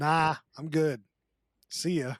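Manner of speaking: usual speaking voice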